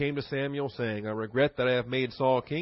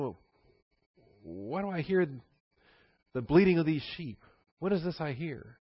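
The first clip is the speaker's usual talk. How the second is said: mock sarcastic delivery. Retelling Samuel's question to Saul about the sheep, retelling Samuel's sarcasm. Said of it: "Wonderful sarcasm".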